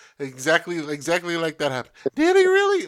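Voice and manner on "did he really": very loud, shrill voice shooting way up in pitch. Retelling their reaction on seeing it happen, voice jumping very high. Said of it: "Like my voice went up that high of an octave when I saw it".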